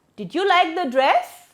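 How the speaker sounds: rising intonation on the word "dress". Intonation lesson, example question: rising intonation on 'dress'. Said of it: "here we have rising intonation".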